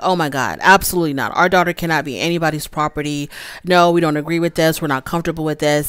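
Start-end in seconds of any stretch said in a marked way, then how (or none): none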